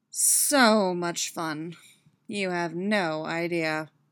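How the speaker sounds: very slow, stretched-out drawl. Narrator reads a woman's reply in a story: drawling. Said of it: "She drawls".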